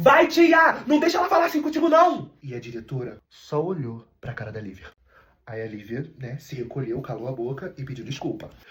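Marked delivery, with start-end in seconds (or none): 0.0-2.3 high-pitched, shrill, very high yelling. Retelling how a friend shouted to the mother: imitating a friend shouting. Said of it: "gritou assim pra mãe dele".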